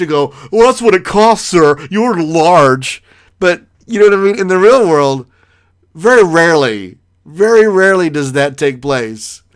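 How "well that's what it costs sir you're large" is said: play-acted, exaggerated, sneering, snide, mocking voice. Retelling a cashier's reply, exaggerated: imitating an amped-up snide voice. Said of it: "I should amp him up".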